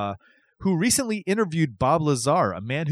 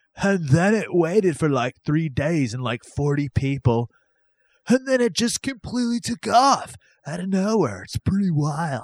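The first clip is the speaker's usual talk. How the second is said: put-on Arizona accent voice. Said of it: "That's Arizona accent if I ever heard one".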